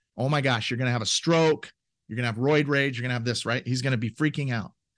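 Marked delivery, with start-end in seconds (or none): none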